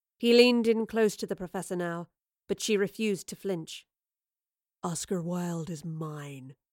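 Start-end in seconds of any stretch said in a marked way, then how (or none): 4.8-6.5 hushed, low, slow half-whisper. Leaning in close to the professor before teleporting away, he speaks, half-whispered. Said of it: "he whispered".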